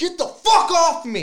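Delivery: very high, very loud, shrieking startled scream. Woken at the movies by a man, the speaker retells his reply: retelling a scream. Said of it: "You're screaming".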